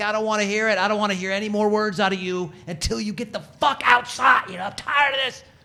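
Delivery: high, furious, all-out screaming, completely out of control, acted out. Retelling shouting at him, retelling a furious scream. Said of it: "screaming my head off".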